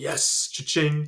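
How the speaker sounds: put-on excited tone. Retelling how a movie character reacts to a meeting invite: imitating someone excited. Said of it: "he's so excited".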